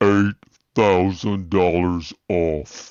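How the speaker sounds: stretched, drawn-out, slowed-down, slow-motion delivery. Replaying the big moment of a play-by-play call: slow-motion replay. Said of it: "Let's hear it again in slow motion".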